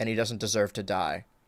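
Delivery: very low, level, flat deadpan delivery. Retelling a line where the character drops the voice: imitating a deadpan delivery. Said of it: "very deadpan like that".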